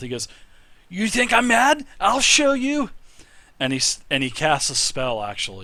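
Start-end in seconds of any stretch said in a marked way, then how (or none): 0.9-2.9 screaming as loud as possible, shrill and very high. Voicing a tiny animated statuette before it casts a spell: screaming at top of voice. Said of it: "just screams to the top of his voice".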